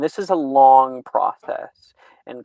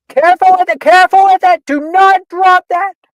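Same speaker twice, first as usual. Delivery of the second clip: very loud, very high, shrill yelling; 12 dB louder than usual. Voicing a character yelling at potion makers like a football coach: yelling like a football coach. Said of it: "yelling like a fucking football coach at you guys".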